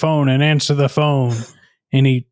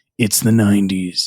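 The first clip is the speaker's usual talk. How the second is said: deep, gritty nineties movie-trailer narrator voice; 6 semitones lower than usual. Speaker imagines a 1991 trailer for this movie; gritty movie-trailer voice. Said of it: "a trailer for this movie made in nineteen ninety-one would be like".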